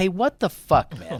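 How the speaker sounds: fired-up, hot-tempered angry yell, high-pitched. Retelling catching the older kid painting the wall: imitating own fired-up yelling. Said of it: "all fired up at him".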